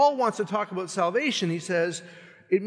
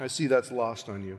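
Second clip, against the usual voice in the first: usual speaking voice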